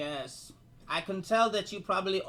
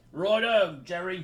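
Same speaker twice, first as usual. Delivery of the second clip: put-on English accent, spoken louder; 3 semitones higher, 8 dB louder than usual. Voicing a half-orc at a tavern table: English accent. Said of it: "one has an English accent".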